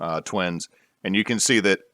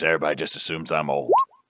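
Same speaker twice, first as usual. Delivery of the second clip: put-on old gnome voice, lower and quieter; 5 semitones lower, 4 dB quieter than usual. Showing a new voice for a character who now looks like an old gnome: old gnome voice. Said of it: "if I sound like this".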